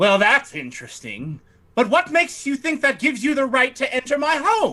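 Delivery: high-pitched put-on sorceress character voice. Voicing a wizardess questioning intruders in her home: voicing a wizardess. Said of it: "She says".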